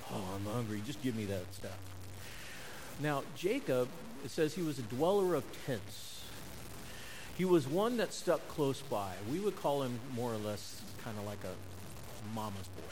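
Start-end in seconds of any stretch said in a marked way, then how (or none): 0.1-1.8 put-on grunting, quieter, faster. Speaker acts out a hunter coming in hungry, imitating a grunt. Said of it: "it's as if he was grunting".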